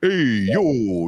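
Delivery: put-on overdone movie-style Brooklyn accent. Mocking how movies set in Brooklyn overdo the accent: overdone movie Brooklyn accent. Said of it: "set in, in, in Brooklyn or something".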